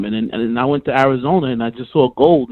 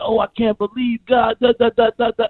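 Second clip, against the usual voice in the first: put-on weepy crying voice, sobbing out words; 9 semitones higher than usual. Retelling a man crying on the news: imitating Lamar crying. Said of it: "Lamar's on the news already crying like".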